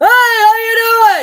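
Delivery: very loud, very high, swooping holler. Imitating a friend who can't hear well, greeting like a grandpa: imitating someone yelling. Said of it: "Did I yell in your ear?".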